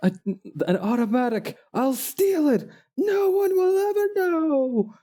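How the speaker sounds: shrill, very loud, high yell with "know" stretched. Quoting a cartoon villain's line in the loudest voice possible. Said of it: "the loudest voice possible".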